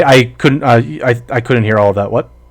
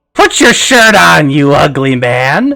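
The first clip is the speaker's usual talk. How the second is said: put-on old woman's voice; 3 semitones higher than usual. Speaker acts out what something said to them: old woman's voice. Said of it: "in the voice of the old woman".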